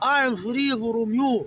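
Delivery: booming drawn-out big voice. Retelling what a man declared when he came to the corner, in a big voice. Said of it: "said in a big voice".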